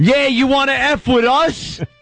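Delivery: put-on New York Long Island accent. Retelling own past outburst at a listener: imitating own strong Long Island accent. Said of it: "I sounded like I came right out of, like, Suffolk County".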